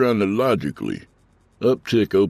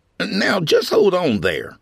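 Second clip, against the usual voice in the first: high, swooping, protesting defensive tone; 13 semitones higher than usual. Blamed for driving a golf cart at a resident, answering defensively. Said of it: "Craig said defensively".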